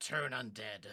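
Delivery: hushed whisper. Voicing a character who whispers an order to an ally: whispering. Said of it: "I whisper to her".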